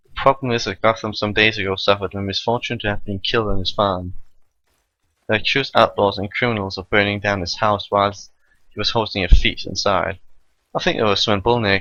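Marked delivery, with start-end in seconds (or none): none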